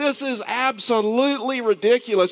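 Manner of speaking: high, drawn-out, angry, stretched-out screaming. Recounting an angry man complaining in a dollar store: retelling a man screaming. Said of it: "he's like screaming at this point".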